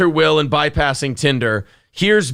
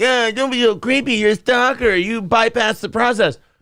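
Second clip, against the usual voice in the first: mocking, raised-pitch voice; 6 semitones higher than usual. Describing how he mimics her reply to him, in a mocking voice. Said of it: "he's doing the mocking voice".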